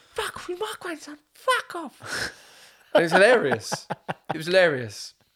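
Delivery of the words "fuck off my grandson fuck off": mock jealous outburst, much higher pitch, slower. Retelling how the speaker's nan reacted to another woman, imitating jealous nan. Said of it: "And she'd come".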